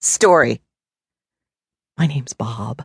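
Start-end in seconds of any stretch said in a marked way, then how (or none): 2.0-2.8 gently spoken, low and soft. A newcomer introduces himself to the narrator, in a soft voice. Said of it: "he said in a soft voice".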